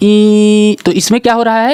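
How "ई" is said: crying with the ee sound drawn out. Showing how a small child cries, crying 'ee' drawn out. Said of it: "बच्चा एक छोटा रो रहा होता है".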